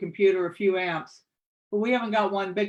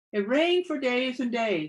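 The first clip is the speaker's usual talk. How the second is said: singsong tone, higher pitch; 4 semitones higher than usual. Reading aloud as a narrator practicing a story line: sing-song.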